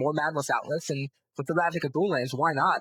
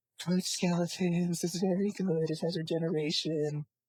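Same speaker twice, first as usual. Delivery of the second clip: put-on playful, slow, whimsical childlike voice; 3 semitones higher, 4 dB quieter than usual. Retelling what a kid playing the Star Wars card game answered, in a whimsical child voice. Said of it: "a whimsical child voice".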